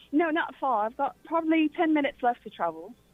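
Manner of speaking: acted British accent, best attempt. Playing a chat with someone off to work, British accent. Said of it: "Hear your best British accent".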